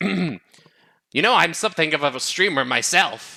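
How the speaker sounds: slow character voice, every word drawn out. Joking with chat, redoing a line in a Willem Dafoe voice. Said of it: "much more Willem Dafoe sort of voice".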